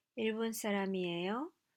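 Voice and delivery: pitch climbing at the end of 사람이에요. Korean lesson, asking a nationality question: rise at end of 사람이에요. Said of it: "you use a rising intonation".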